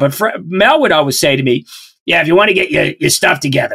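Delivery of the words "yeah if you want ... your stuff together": put-on, very gravelly man's voice. Recalling what the man you taught for would always say to you, in Mel's really gravelly voice. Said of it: "Mel had this like really gravelly voice".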